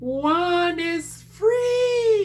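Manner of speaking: very high character voice, stretched out freely. Chatting about plans for the week: Dobby voice. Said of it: "in my Dobby voice".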